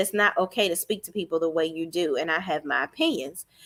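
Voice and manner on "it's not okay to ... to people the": usual speaking voice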